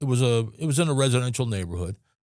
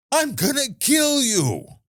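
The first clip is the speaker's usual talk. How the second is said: mock very high, drawn-out, playful joking scream; 13 semitones higher than usual. Retelling how a man jumped on a table and screamed, retelling a joking scream. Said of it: "starts screaming jokingly".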